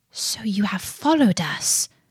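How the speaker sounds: ordinary delivery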